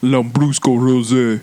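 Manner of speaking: mock Russian pronunciation, put-on accent. Saying an Italian wine's name as if Russian, in a fake Russian accent. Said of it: "I'm pronouncing it like I'm fucking Russian".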